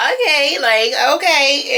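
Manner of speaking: high-pitched, laughing, flustered, caught off guard. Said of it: "even caught [name] off guard".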